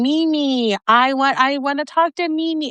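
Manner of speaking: high, thrilled, excited yelling. Retelling someone in the background hearing her voice, imitating high-pitched excited yelling. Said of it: "with a very high pitched yelling".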